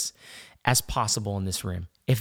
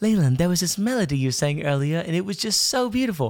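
bad put-on Australian accent drifting into British; 4 semitones higher than usual. Retelling what a friend said at the table, imitating an Australian accent. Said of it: "I'm gonna butcher her accent".

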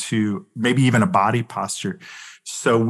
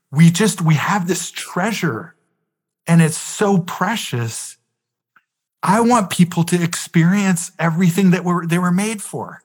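mock exasperated, earnest, frustrated outburst, pitched up; 6 semitones higher than usual. Retelling the other person's reply in an argument: imitating someone speaking in frustration. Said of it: "so in frustration, he goes".

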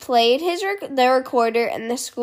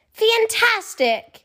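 very high-pitched, ringing shouted yell; 9 semitones higher than usual. Narrator voicing a character finding his long-missing best marble: shouted. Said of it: "he shouted".

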